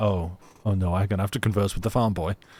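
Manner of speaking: put-on Parisian French accent. Discussing a character's accent, doing Passepartout's Parisian accent. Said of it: "You can tell Passepartout's Parisian. His accent's like".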